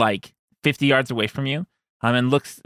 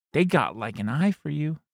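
hushed whispering monkey voice, quieter; 3 semitones higher, 6 dB quieter than usual. Voicing a monkey who whispers a secret into a player's ear: whispering monkey. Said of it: "let me whisper in your ear".

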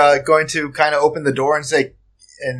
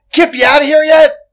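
loud, shrill, very high-pitched scream; 12 semitones higher, 6 dB louder than usual. In a game, a character calls out to Kip: screaming. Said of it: "I'm screaming".

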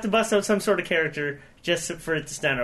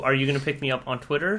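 normal talking voice

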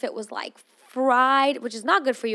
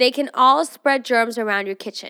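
ordinary delivery

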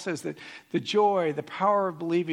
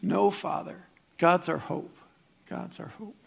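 put-on small, frail, creaky old woman voice. Retelling how an old lady called from the back: little old lady's voice. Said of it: "a little voice from the back with a little old lady".

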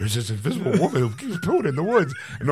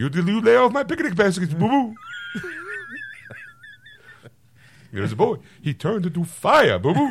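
put-on cartoon bear voice, pitched much higher; 10 semitones higher than usual. Performing a bit as Yogi answering Boo-Boo: Yogi Bear impression. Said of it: "Ladies and gentlemen, Yogi Bear and Boo Boo".

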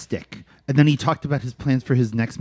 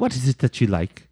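put-on French accent. Retelling a story where a woman asks a man something, in a French accent. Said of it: "She asks him in a French accent".

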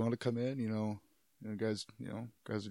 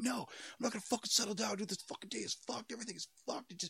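put-on, very high-pitched, heated angry outburst; 12 semitones higher than usual. Retelling how a man went off after being told to settle down, mock-angry outburst. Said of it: "He went off".

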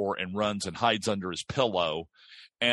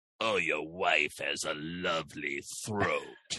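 low, hushed, creepy vampire voice; 5 semitones lower, 5 dB quieter than usual. Voicing a film character in your head while watching: Nosferatu voice. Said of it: "Nosferatu will go".

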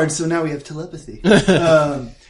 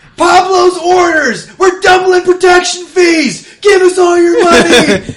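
full-lung, very high, very loud, shrill scream; 11 dB louder than usual. A player's character kicks open the barbershop door and shouts demands, screaming loudly. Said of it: "I'm screaming loud enough".

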